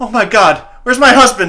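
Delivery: frantic, very high, very loud panicked scream. Voicing a mother who finds her husband gone: screaming in panic. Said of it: "the mother looks up and screams and goes".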